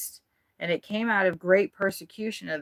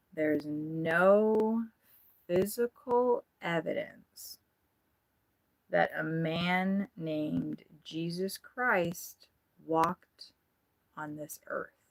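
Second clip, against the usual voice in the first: very slow, every word spaced apart; 4 dB quieter than usual. Making a point to his listeners, saying it real, real slow. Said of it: "I'm going to say this real, real slow".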